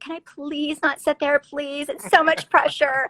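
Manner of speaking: tearful, pleading put-on voice. Retelling being told of the reunion seat: retelling own tearful plea. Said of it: "I started crying. I was like".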